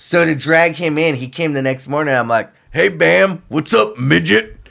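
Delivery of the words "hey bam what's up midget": rough, creaky, raspy voice. Retelling a joke greeting said to Bam the next morning: Bam's voice. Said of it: "I would talk in Bam's voice".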